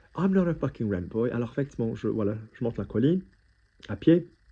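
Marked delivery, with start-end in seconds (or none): 0.1-1.3 put-on half-shout through laughter. Telling a story of walking up a hill, retelling a laughing scream. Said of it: "I'm screaming at the top of my voice".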